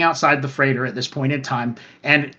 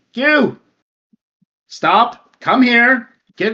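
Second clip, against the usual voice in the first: high-pitched, drawn-out shouting; 7 semitones higher, 4 dB louder than usual. Voicing a man coming over and yelling at one of the four. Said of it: "he's yelling at one of the four".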